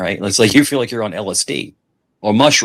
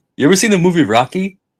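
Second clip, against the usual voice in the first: high, put-on priest's accent, very high pitch; 10 semitones higher than usual. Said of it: "he has an accent".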